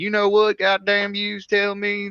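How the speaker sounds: put-on slow, high, drawled American Southern accent. Describing coming back inside after getting food, slipping into a southern accent. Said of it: "don't have the Southern accent".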